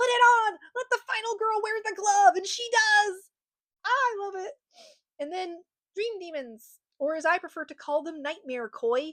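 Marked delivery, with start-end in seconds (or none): 0.0-2.4 full-volume, loud, high, encouraging screaming. Retelling own reaction while watching a movie scene: imitating own screaming. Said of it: "and I'm screaming".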